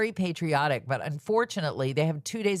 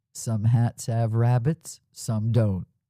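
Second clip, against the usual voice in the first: big on-air radio DJ announcer voice; 5 semitones lower, 4 dB louder than usual. Quoting a man from radio he used to hear, in his big radio voice. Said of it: "in his big radio voice".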